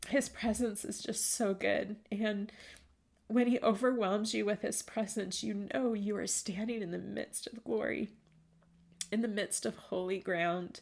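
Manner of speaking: teary-voiced, close to tears. Addressing the listeners right after apologizing for getting tearful, still tearful. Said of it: "I didn't mean to get tearful with you all".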